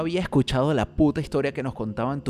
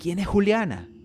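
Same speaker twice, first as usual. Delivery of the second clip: high-pitched, sheer desperation; 7 semitones higher than usual. Narrator reads Francisco asking the narrator who Juliana is, desperate. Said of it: "Me preguntó con desespero Francisco".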